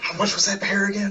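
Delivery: barely audible, hushed voice. Voicing a character asking the bartender the beer's price: very quiet. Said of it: "very, very, uh, quietly just kinda asks".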